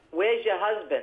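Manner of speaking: put-on New Jersey accent. Retelling what her mother would say when she visited, in a Jersey accent. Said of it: "she'd say in her Jersey accent".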